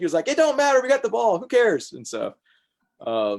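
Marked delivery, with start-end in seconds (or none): 0.3-1.9 very high, loud, climbing, animated outburst. Retelling what the coach said after the play, imitating Coach Griffin, voice rising. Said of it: "as his voice gets higher".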